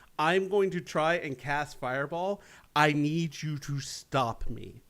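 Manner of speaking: slow, hushed half-whisper. Retelling what was half-whispered to a fellow player on stage: imitating own past half-whisper. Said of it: "what I was whispering was".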